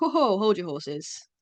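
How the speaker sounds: light, jokey, jovial and good-humoured. Showing how a common phrase is usually said: jovial. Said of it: "in quite a, like, jovial way".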